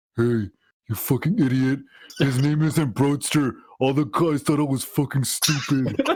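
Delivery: furious, pissed-off venting rant. Speaker retells his brother coming home from school mad at him, imitating an angry brother. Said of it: "he's pissed as fuck at me".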